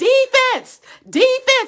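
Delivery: chirpy, high, squeaky little yell at full effort. Recounting cheering for their team at a football game, retelling a squeaky yell. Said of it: "I began in my little squeaky voice to say".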